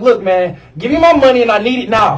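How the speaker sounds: acted-out mock yelling. Recounting demanding money back with fifty people waiting in line: retelling a yell. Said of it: "I was yelling".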